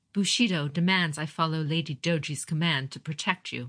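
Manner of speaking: plain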